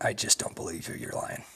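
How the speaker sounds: low, soft, hushed voice.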